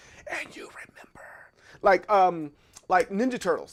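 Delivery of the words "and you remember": theatrical, very hushed, dramatic movie-style whisper. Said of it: "In the movies, they'd be like".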